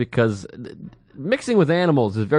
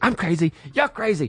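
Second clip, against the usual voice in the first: imitated angry whisper getting louder, higher pitch; 4 semitones higher than usual. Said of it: "they're trying to whisper, but it just keeps getting louder".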